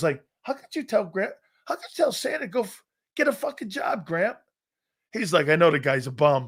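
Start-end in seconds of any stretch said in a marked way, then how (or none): 0.4-4.4 mock, high-pitched, crushed, devastated little kid voice. Retelling how, as a little kid, he questioned his grandfather: acting out being devastated. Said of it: "I was devastated".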